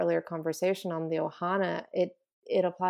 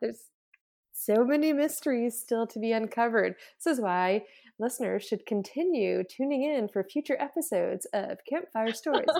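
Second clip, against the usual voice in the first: radio advert commercial announcer delivery; 4 semitones higher than usual. The speaker plugs future episodes to listeners in a commercial announcer voice. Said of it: "my commercial voice came out for that".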